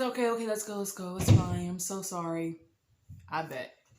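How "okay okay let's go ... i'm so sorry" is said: ordinary talk, nothing marked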